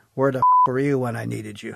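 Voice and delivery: snarky, swooping, sarcastic delivery. Retelling what a sergeant said after a gut punch: imitating a sarcastic remark. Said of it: "saying in some sarcastic way".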